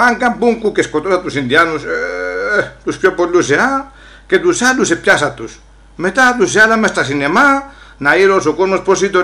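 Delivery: ordinary delivery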